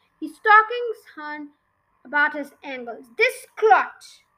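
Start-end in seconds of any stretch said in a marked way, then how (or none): 3.2-4.0 loud, high, thunderous headmaster-style boom. A headmaster, pointing a riding crop at a boy; booming. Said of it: "boomed the headmaster".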